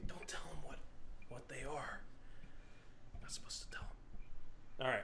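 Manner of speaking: breathy, hushed whisper, barely there. Making an aside before sorting out the mic, the speaker is whispering. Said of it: "I don't know why I'm whispering".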